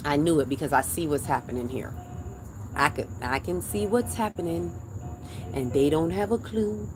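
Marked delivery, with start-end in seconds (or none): 5.7-6.9 pitched-up, put-on cartoon character voice. Talking about seeing what's happening here: Lion King voice. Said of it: "in my Lion King voice".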